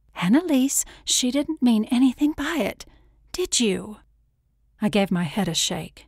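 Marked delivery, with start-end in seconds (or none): 0.1-3.9 panicky, soothing tone, pitched up. Someone addresses their granny after a tense moment, panicked yet consoling. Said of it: "panic and consolation swirling in her voice".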